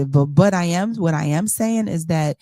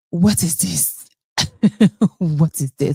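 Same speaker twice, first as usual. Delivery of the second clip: put-on spoken with a Nigerian accent. Retelling Wendy's reaction to another woman, Wendy's Nigerian accent. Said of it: "in her Nigerian accent".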